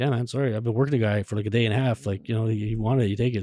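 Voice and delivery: ordinary talk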